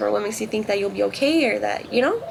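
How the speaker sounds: ordinary talk, nothing marked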